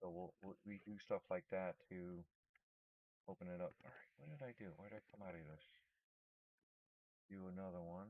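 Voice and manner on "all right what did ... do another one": much softer, low muttered voice. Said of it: "I keep talking low".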